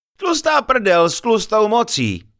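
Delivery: chuckling, laughing through words, high swooping laugh. A companion answers the narrator's remark while he studies the map, laughing. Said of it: "zasmál se Pavel".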